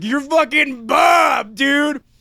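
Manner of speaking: high-pitched, slow, triumphant shout.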